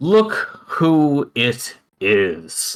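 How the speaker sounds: loud, big hailing call. Reading a story aloud, voicing someone on a ship in a loud voice. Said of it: "a loud voice says".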